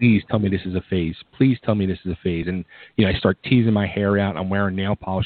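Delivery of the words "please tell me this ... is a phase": mock pleading, begging voice. Retelling their mom's reaction to their music-scene phase, imitating mom begging. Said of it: "my mom was just begging".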